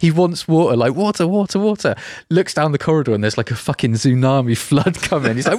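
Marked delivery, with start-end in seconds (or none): 0.8-2.0 high shout, repeated over and over. Speaker recounts a scene where a man shouts for water, retelling a shout. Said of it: "And he's shouting like".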